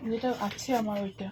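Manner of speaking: soft, low-volume speaking. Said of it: "আমি আস্তে আস্তে কথা বলছি".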